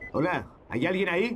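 high-pitched, calling-out shout. In a game scene, a character is shouting. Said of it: "No grites".

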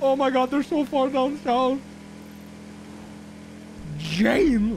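frightened. Seeing them far down south and calling out to Jane, scared. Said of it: "I'm so scared".

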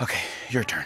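fake panting while speaking. In a joke, the speaker voices Trump's TV turning to his phone, mock panting while speaking.

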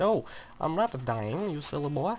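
slow, unhurried, fake Italian accent. Retelling what they said in their Let's Play, in a put-on Italian accent. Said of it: "amazing accent".

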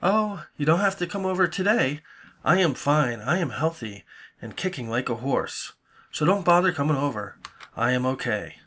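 mocking, condescending, sarcastic talk-down voice. Retelling the messages someone leaves every day: imitating a mocking, condescending message. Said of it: "mocking type messages".

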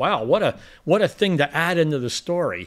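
ordinary talk

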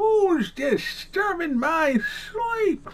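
put-on very high, loud, squealed old prospector voice. Asked to do a gopher impression, answering with a Gopher impression. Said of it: "do a gopher impression".

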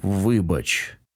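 muttered, mumbling. A narrator reads a man answering a sobbing woman he struck, muttered. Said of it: "пробурмотів він".

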